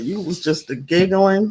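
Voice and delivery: ordinary talk, nothing marked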